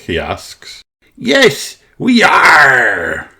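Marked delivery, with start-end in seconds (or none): 1.2-3.2 cheering, high put-on pirate voice, drawn-out "are". Narrator reading the children's cheer as they play pirates: pirate voice. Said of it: "cheers in their best pirate voices".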